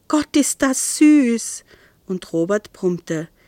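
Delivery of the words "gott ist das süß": overjoyed, high, drawn-out delight, almost crying. Narrator reads a woman seeing him bring his girl home, delighted, near happy tears. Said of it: "vor Glück und entzückenden Tränen nahe Isolde".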